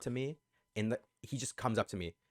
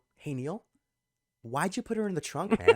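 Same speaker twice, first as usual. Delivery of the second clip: play-acted very courteous, friendly, raised, pitched-up voice; 8 semitones higher, 6 dB louder than usual. Retelling asking a friend why he did something: imitating own polite tone. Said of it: "I say it so politely".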